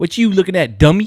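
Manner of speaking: put-on heavy, loud, high Baltimore street accent, taunting. Imitating how people from Baltimore talk: imitating a Baltimore accent. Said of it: "you meet somebody from Baltimore and they say some shit like".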